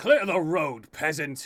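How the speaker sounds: rough, gruff, very loud shout. A game master voicing someone yelling at a family on the road, gruff yell. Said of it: "you hear a gruff voice yell out".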